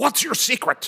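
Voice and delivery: loud, very high-pitched teasing yell. Retelling a joke played on a young patient: imitating someone yelling. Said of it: "put his hands around the little boy's neck and yelled".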